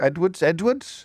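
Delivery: put-on Welsh accent. Reading out Welsh surnames on national radio: put-on Welsh accent. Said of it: "I'm trying to do the accent".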